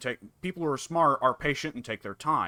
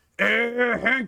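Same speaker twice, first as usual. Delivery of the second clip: acted, very high, loud shout; 9 semitones higher, 5 dB louder than usual. Retelling a Japanese dub clip where Boomhauer shouts from a car: imitating Japanese-dub Boomhauer shouting. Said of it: "and then shouts out".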